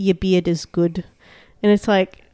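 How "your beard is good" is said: put-on New Zealand accent. Speaker showing a co-host what their New Zealand accent always says, New Zealand accent. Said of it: "whenever I do a New Zealand accent".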